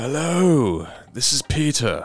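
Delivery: put-on British accent. Greeting a scammer on a call: put-on British accent. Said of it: "I have a British accent".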